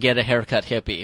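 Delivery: ordinary delivery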